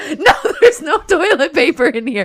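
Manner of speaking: high, frantic, hysterical panicking. Telling a story about a desperate bathroom moment, retelling own hysterical panic. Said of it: "So I'm like hysterical at this point".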